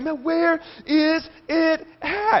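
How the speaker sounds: put-on frantic voice. Retelling searching everywhere for his wallet, retelling frantic searching. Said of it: "I'm frantic".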